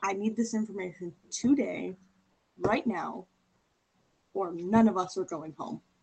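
menacing, intimidating, threatening tone. Intimidating a character in a game to get information: intimidating threat. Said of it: "lean in and be like".

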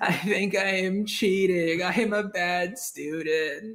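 squeaky freak-out, very slow, drawn-out, way up high. Retelling a scene where SpongeBob thinks he's cheating; imitating SpongeBob freaking out. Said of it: "SpongeBob starts freaking out".

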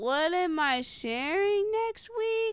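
hesitant unsure tone. Answering when asked what you are sharing next, saying it unconfidently. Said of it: "Why are you saying it so inconfidently?".

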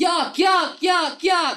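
shrill, very high, loud yell. Reacting to a line just discussed, after moving the mic away: yelling. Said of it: "I just yelled, "Yuck."".

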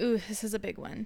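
normal talking voice

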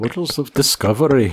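attempted Irish accent, sounding Scottish. Repeating a quote after being asked for an Irish accent: Scottish-sounding accent. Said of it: "That's Scottish".

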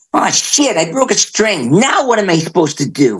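very high, needy, whiny nasal voice. Recalling breaking a string on stage at 25, do a mock-whiny nasal voice. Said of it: "I was all whiny and nasally and complaining".

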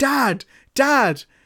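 play-acted high shout, repeated over and over. Describing how he runs around the house shouting for his dad: imitating someone shouting. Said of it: "he's shouting".

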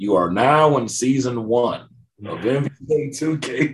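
tired, worn-out, stale game announcer voice. Speaker imitates what plays each time the game opens; stale NBA 2K announcer voice. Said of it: "you hear that one stale announcer voice".

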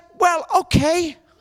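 put-on whimpering voice. Recounting standing up to a man who taunted them, imitating his whimper. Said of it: "He just whimpered".

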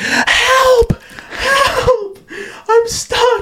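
very high, very slow, drawn-out cries. Retelling being stuck in their room after the doorknob came off, retelling screaming for help. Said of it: "So I just start screaming, banging on the door".

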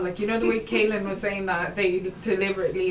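plain

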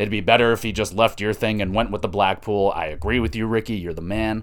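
ordinary talk

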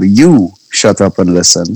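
ordinary delivery

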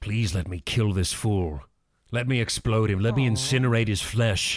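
whispered, in a put-on voice. Whispering to a character in a tabletop game: whispering in character. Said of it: "I wanna whisper in Mister Blunk's ear".

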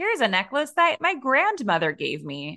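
mechanical, robot-like delivery, pitched high. Retelling an American Girl TikTok's voice for Samantha: robotic Samantha voice. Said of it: "using that robotic voice for Samantha".

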